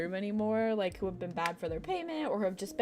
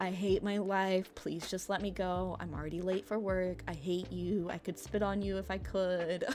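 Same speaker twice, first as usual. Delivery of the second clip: level, flat, deadpan one-note monotone. Retelling being pulled over for speeding, acting out her own answers in flat monotone. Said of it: "Everything was just like monotone".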